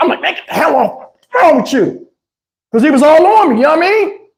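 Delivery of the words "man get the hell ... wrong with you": mock, heated, furious angry blow-up. Retelling what he said to a man who was all on him, retelling losing his temper. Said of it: "I lost it".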